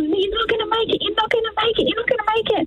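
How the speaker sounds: high, rushed, tearful crying voice. Retelling what her ex kept saying; imitating someone crying. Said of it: "my ex is crying. He's going".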